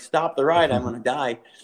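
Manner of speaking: plain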